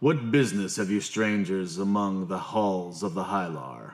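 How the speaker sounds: low, deep, rumbling dwarf leader voice. Narrator voicing the dwarf leader challenging the strangers in the halls, rumbling voice. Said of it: "He rumbles".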